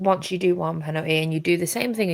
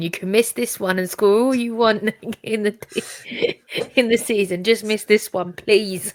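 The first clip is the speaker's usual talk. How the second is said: loud, begging, pleading yell; 4 semitones higher, 4 dB louder than usual. Speaker recalls watching a penalty being taken, retelling screaming at the screen. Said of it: "I was screaming at the screen".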